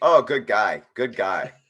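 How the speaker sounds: dry, ironic, insincere sarcastic tone. Discussing who financed the projects after naming j.p. morgan, sarcastic. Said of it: "I'm being very sarcastic".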